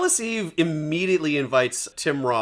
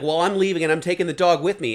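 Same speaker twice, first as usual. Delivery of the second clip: normal talking voice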